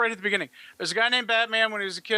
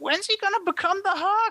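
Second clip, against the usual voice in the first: put-on very high, desperate child's pleading voice; 12 semitones higher than usual. Retelling a kid at the movies waiting for the Hulk: imitating a desperate kid. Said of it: "his voice gets a little more desperate".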